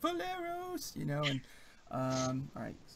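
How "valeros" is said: shrill, very high, in-character shout. Voicing characters who see their ally fall: yelling in character. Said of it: "they yell".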